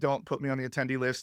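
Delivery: ordinary delivery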